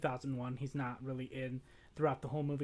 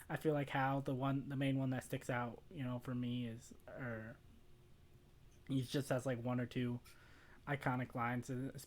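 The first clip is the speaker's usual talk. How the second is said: normal talking voice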